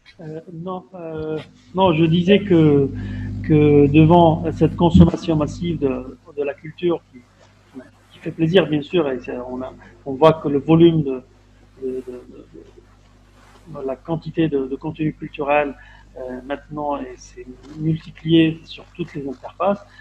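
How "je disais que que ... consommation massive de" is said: voice raised, louder and slower. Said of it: "Faut élever la voix".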